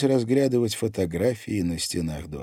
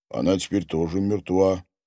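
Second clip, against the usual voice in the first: usual speaking voice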